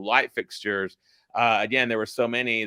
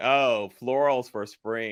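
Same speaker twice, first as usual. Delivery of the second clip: acted sarcastic tone; 2 semitones higher than usual. Quoting a line from The Devil Wears Prada: sarcastic Devil Wears Prada line. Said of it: "where she was being sarcastic".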